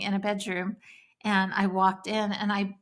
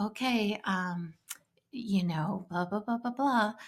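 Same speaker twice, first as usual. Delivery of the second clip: mock timid meek speech, quieter; 4 dB quieter than usual. Retelling how a meek mother would speak: imitating a meek mother. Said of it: "a meek mother coming to them and saying".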